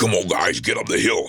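rough, gruff video-game style voice. Speaker demonstrates the voices he does for video games, giving a gruff voice. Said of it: "these gruff voices".

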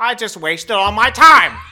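very loud, high-pitched, drawn-out belting delivery. Imitating Adam Driver reacting to a podcast: Adam Driver impression. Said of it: "that's my impression".

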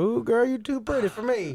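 very high-pitched mocking voice. Making fun of how a character talks: mocking imitation of Ennis's voice. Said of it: "I do wanna make fun of him".

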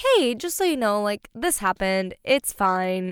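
passive-aggressive voice. Retelling a voice message sent to him: imitating own passive-aggressive tone. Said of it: "came across kind of passive aggressive".

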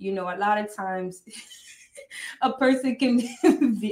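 talking through laughter. Giving an impression when asked, laughing while talking. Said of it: "I'm trying not to laugh at you".

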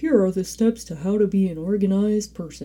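talking like a bear. Speaker mimicking a type of person they say they aren't, bear voice. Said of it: "bear voice when I'm being special".

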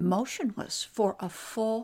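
ordinary delivery, nothing marked

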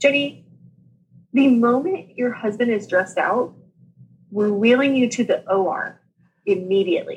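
normal talking voice

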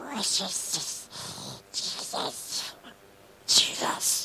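raspy, whispered, croaking voice. Speaker acts out a man calling out the best he could, raspy Smeagol voice. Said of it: "in a raspy, rotted vocal cord voice, sounding like Smeagol".

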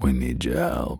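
very rough, raspy, heavy-smoker growl. Vin Diesel appears out of nowhere with his crew; play Vin Diesel after smoking 60 cigarettes. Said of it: "I know he kind of talks like this".

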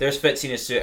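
normal talking voice

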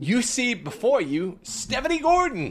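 very high, drawn-out, swooping announcer voice. Greeting listeners and introducing a guest: UFC announcer voice. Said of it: "Using my UFC announcer voice".

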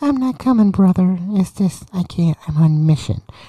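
put-on high-pitched voice. Retelling his brother's reply when asked to come, imitating brother's high voice. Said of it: "My voice ain't that high".

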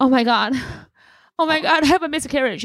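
high, panicky mock crying. Acting out their own attention-seeking scene for listeners, mock crying and panicking. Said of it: "I start crying, panicking".

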